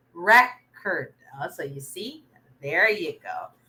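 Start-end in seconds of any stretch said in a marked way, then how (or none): 0.2-1.2 record with stress on first syllable. Giving the answer record as a noun: stress on first syllable of record. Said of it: "the stress is in the first syllable because it's a noun".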